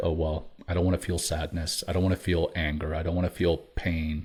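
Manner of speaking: plain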